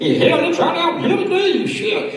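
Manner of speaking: put-on high-pitched country good ol' boy voice.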